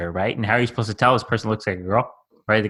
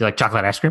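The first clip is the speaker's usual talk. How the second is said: quick, rushed delivery. Acting out how he would ask people the trick question, said really quickly. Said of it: "he'd say it really quickly".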